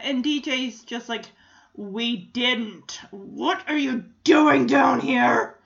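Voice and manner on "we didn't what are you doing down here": slow, drawn-out demonic voice. Retelling what DJ said on the show, in DJ's demon voice. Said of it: "that's me in DJ's demon voice".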